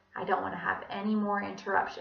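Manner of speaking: ordinary talk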